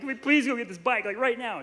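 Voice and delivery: tearful, crying, begging tone. Retelling a past exchange with their mom, imitating own past crying. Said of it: "I'm like crying".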